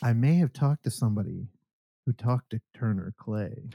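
hushed, secretive whisper. Sharing news meant for one listener only, whispering. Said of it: "I'm whispering now because only you are supposed to hear this".

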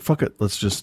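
normal talking voice

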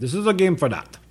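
put-on English spoken with a Russian accent. Repeating the other speaker's line back to them: imitating a russian accent. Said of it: "like a Russian accent".

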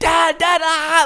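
very high, shrieking, squealing screams. Retelling his daughter screaming while he tickles her, imitating her screaming. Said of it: "like she's screaming again".

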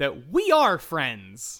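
wholesome, confident, earnest 1950s-style delivery. Declaring friendship with two others: 1950s do-gooder confidence. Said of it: "I'm going to say with real, genuine fifties do-gooder confidence".

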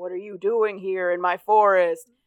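put-on big, scary monster voice. Retelling how Zoe scares the kids in the forest, Zoe's put-on big scary voice. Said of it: "Zoe is like making like a big scary voice".

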